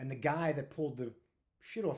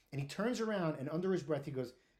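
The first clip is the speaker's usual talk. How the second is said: ordinary talk, nothing marked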